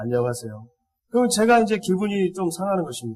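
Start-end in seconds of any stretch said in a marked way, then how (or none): 0.0-0.7 mock emotionless, flat, cold, indifferent tone. A father imitates his child greeting him with no gladness, flat cold greeting. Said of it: "목소리에 전혀 아빠를 반가워하는 그 감정을 담지 않고".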